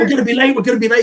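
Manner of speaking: put-on high, loud, anxious fretting, said twice over. Retelling a stressful car ride: imitating Mick stressed. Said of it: "And he's like".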